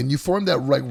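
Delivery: ordinary talk, nothing marked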